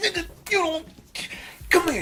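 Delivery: very high-pitched, pressuring voice. Retelling the manager calling them over: imitating manager like Joe Jackson. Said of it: "like Joe Jackson".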